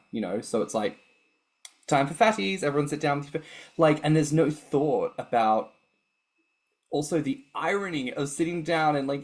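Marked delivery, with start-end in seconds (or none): 1.8-3.4 motherly voice. Recalling a parent announcing the evening TV show: imitating mother's voice. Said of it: "my mother's voice going".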